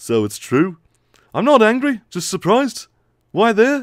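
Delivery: put-on Liverpool accent. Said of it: "my hybrid [name] and [name]".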